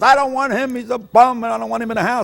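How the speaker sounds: high, loud, furious yelling father voice.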